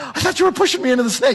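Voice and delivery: very high, gasping, hyperventilating, rushed panic. Retelling what a companion said after a rattlesnake rattled: imitating someone hyperventilating.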